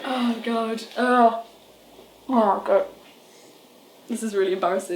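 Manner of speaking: crying, tearful voice. Overwhelmed and embarrassed on camera among friends: crying. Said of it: "I'm crying".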